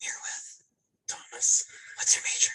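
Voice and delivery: hushed, soft whisper. Interviewing a student on the library's quiet floor, whispering. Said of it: "We are whispering".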